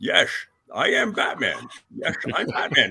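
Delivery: drawled put-on Scottish accent. Joking about playing Batman, doing a Sean Connery voice. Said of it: "do a Sean Connery voice".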